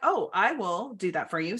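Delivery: snarky, knowing sarcasm. Retelling own reply to a group member asking for help: retelling own sarcastic reply. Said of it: "being kind of an asshole and sar-, sarcastic".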